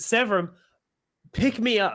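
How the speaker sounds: put-on urgent yell. A gamer shows what others hear him shout out loud, yelling at a teammate. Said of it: "Like I'm like yelling at you".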